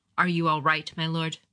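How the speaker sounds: plain reading voice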